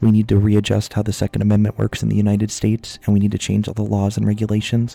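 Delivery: mock soft, sweet whisper. Answering chat's claim of sounding combative, mock soft whisper. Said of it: "but I said it like this instead of my normal voice".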